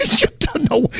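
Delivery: high-pitched words spoken while laughing.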